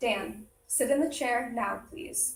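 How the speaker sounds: calm, steady, firm, slow, polite delivery. Showing a better way to give a child directions: firm, slow and polite.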